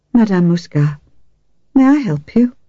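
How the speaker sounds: mild, friendly, gentle, pleasant, welcoming tone. The narrator greets a woman who has come in, soft and pleasant. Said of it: "My voice was soft and pleasant".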